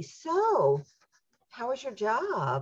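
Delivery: high, swooping questioning tone, "so" drawn out. Imagining her asking the scapegoat child about the job, imitating a questioning tone. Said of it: "with a question in the voice".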